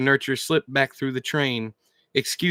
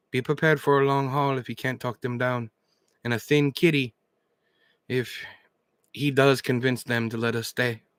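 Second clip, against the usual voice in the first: ordinary delivery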